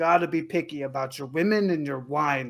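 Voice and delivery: thick put-on Greek accent. Telling about a man at a greek winery, quoting him in a thick greek accent. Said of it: "he had this like thick accent".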